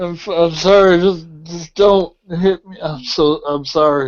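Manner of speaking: put-on woozy, dazed, punch-drunk slurred speech. Playing a character coming to after being hit, sounding drunk from pain. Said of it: "he kind of sounds like he's drunk now off the pain".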